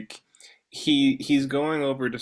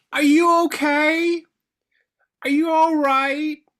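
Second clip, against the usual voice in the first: put-on high, loud, fussing old-lady yell. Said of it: "seemingly senile women are yelling down there".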